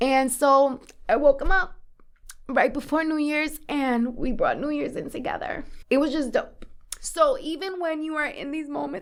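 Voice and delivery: crying through the words, tearful, very high-pitched. Telling listeners about caring for their dad after surgery, crying. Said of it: "I can't believe I'm crying right now".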